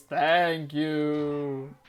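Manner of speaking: creepy put-on spooky voice. Telling listeners what the vases say when given an egg, in a creepy vase voice. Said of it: "they say in a very like creepy voice".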